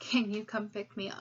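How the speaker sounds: ordinary talk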